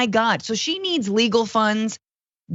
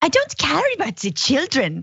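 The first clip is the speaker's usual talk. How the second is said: shaky, high, swooping put-on voice; 5 semitones higher than usual. Doing an impression, in a bit mocking the former first lady: Melania Trump impression. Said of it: "my Melania's off".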